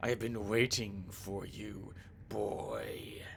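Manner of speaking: low, hushed, eerie, creepy voice. Narrator voicing a stranger's words to the boy, creepy voice. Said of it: "in a creepy voice says".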